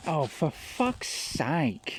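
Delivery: high, gummy voice, like a mouth with no teeth. Retelling how a woman swore as the speaker's shadow passed over her; toothless gummy voice. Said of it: "really gummy sounding".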